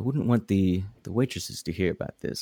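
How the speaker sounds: hushed, secretive, private-sounding tone. Hand on his shoulder, leaning in close so the waitresses won't hear, speak in a hushed tone. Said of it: "so I can kind of keep it a hushed tone".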